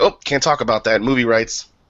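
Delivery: ordinary delivery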